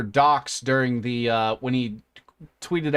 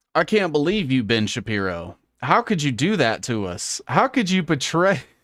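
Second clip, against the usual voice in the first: theatrical, swooping, put-on sarcastic tone of feigned hurt; 2 semitones higher than usual. Riffing live while researching for everybody: put-on sarcastic tone. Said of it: "If I start getting all sarcastic like that".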